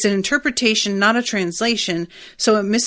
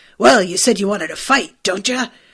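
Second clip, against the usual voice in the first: woman doing a rough, roughened put-on boy voice. Describing an english dub, imitating how the boy character talks in a rough dubbed boy voice. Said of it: "kind of this rough".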